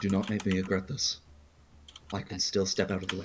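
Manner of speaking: hushed half-whisper spoken right up close. Voicing a character who pulls someone close and half-whispers a warning: half-whispering in character. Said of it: "Whisper in his ear".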